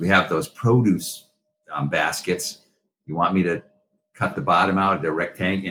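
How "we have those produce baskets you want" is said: usual speaking voice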